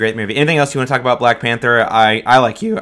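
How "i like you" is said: voice breaks partway through, cracking. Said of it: "Whoa, voice crack".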